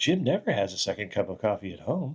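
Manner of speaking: echoing, echoey voice. Retelling a coffee commercial, the woman's thought in an echoey inner-thought voice. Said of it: "you hear the echoey voice in her brain going".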